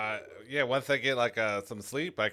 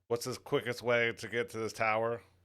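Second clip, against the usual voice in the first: normal talking voice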